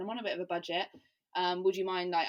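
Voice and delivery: normal talking voice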